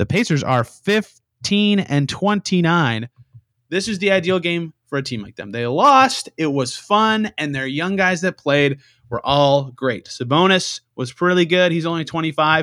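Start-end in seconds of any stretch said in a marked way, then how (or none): 0.0-3.1 slower, unhurried delivery with carefully spaced words. Repeating a sentence so everybody can hear it, saying it slower. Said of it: "let me say that a little slower".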